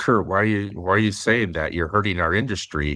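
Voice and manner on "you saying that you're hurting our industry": ordinary talk, nothing marked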